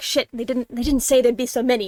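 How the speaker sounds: muttering under the breath. A narrator voicing a character sliding into the shadows, muttering under his breath. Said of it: "he swears under his breath and he's like".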